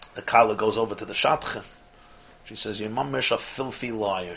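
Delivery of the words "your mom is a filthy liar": soft, hushed, secretive half-whisper. Telling a joke, voicing the bride speaking to the matchmaker: acted half-whisper. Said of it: "She whispers".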